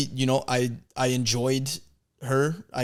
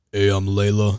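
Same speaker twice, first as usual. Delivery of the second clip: put-on deep woman's voice, lower and louder; 4 semitones lower, 5 dB louder than usual. Joking that the wife of a high performer joins the podcast: imitating Leila Hormozi's deep voice. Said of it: "sounds like her voice is deeper than mine".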